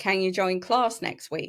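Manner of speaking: dry, pointed, mocking sarcastic tone. Retelling a teacher's comment in the library: imitating a sarcastic teacher. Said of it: "the odd sarcastic comment".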